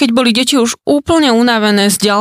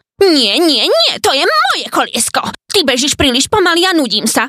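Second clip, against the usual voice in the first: sharp, animated, snappish, snapping tone; 4 semitones higher than usual. A character answers another, snapping back. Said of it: "odvrkol Škriepko".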